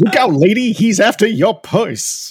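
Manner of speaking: put-on belted high and loud, old New York accent. Describing an Audible version of the Sandman, the speaker does his thirties New York voice. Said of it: "They're trying to give him like a thirties voice".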